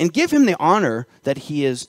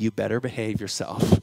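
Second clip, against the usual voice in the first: hushed, mock-stern delivery; 7 semitones lower, 9 dB quieter than usual. Recalling a warning heard before meeting Barack Obama, imitating a stern warning. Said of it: "the most stern".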